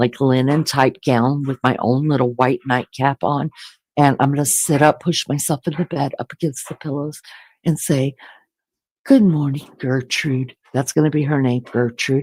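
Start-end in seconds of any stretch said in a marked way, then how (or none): 9.0-10.5 acted, all-proper manner of speaking. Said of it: "sit up in bed all proper".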